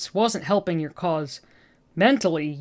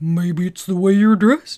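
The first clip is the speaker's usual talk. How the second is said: put-on dopey cartoon voice, louder; 6 dB louder than usual. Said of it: "doing my best Patrick Star voice".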